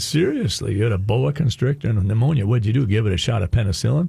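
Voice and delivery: sarcastic, mocking, incredulous jab. Retelling own reply to a wife's story: retelling a sarcastic remark. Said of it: "so I sarcastically looked and I said".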